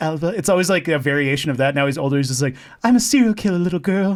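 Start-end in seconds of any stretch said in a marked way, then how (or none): 2.8-4.2 put-on weird affected mid-Atlantic accent, pitched up. Imitating how an older man always talks, weird affected mid-Atlantic accent. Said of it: "kind of this kind of weird, affected, like East Coast, almost mid Atlantic, but not quite".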